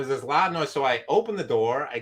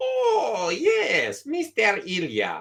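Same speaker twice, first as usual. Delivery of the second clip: put-on Saudi Arabian accent; 7 semitones higher than usual. Retelling what the lady at the sandwich counter said, imitating Saudi Arabian accent. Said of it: "it's like a Saudi Arabian kind of uh, accent".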